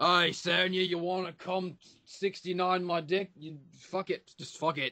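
tough, badass Australian accent. Describing how a bald guy sounds in the speaker's head: Kano voice, badass Australian guy. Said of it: "really badass Australian guy".

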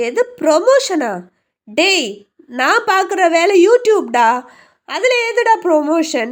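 loud, slow, drawn-out baffled disbelief.

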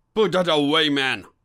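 loud, sharp, cautioning tone. [name] speaks to a man aiming a service pistol at the attic, warning. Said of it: "warned [name]".

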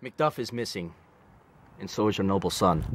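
very quiet, very low, hushed, grave voice. Acting a scene in rehearsal, delivering bad news, serious. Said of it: "And this is serious".

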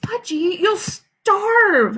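weepy, tearful, very high outcry. Reading a story, the mother answers her son's refusal, crying out. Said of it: "Mother cried".

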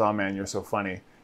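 low, quiet mutter. Retelling a scene, laughing along at a joke in the club: Ray Liotta under his breath. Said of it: "under his breath says".

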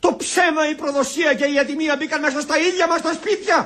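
shouting dramatically. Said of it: "Μη φωνάζεις".

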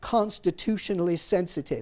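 plain reading voice

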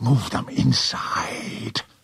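sharp, hissed delivery. Jupiter speaks to Morgan beside the crystal's ring, hissed. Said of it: "hissed Jupiter".

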